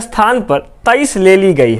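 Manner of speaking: ordinary delivery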